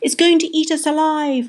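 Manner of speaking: high, shrieked delivery. Narrator reads a character's cry as a giant eyeball appears, shrieking. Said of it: "shrieked Polly".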